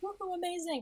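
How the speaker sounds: put-on high-pitched, excited cheering whoop. Retelling running around after grabbing a set list: imitating own excited freakout. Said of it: "running around freaking out on the sand".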